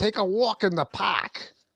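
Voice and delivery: exaggerated Brooklyn accent. Repeating the phrase someone always asks them to say, in an exaggerated new york accent. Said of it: "I'm exaggerating it now".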